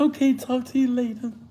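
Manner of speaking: very high office phone secretary voice. Mocking how a caller ended the call: imitating her secretary voice. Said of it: "She put on her secretary voice".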